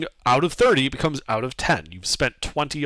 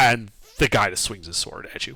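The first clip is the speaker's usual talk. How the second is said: ordinary delivery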